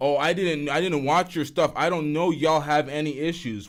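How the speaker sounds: usual speaking voice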